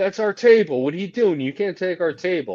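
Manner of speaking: loud, full-throated yelling. Retelling what two wrestlers shout at ringside: imitating people yelling. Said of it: "yelling so loud right now".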